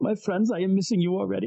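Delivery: high, tearful, weepy big troll voice. Retelling what the troll said while holding his daughter, imitating a weepy troll. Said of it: "He's very weepy".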